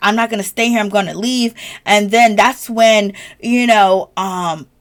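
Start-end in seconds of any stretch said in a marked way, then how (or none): 0.0-1.5 put-on crying, tearful voice. Retelling a reality show scene where a cast member cries: imitating Karen crying. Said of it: "she's crying, like".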